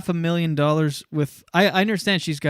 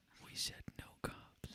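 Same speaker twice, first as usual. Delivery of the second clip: eerie, creepy, hushed, threatening whisper. Playing a kidnapper in a kidnapping ASMR bit, a creepy whisper. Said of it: "whispering is so creepy".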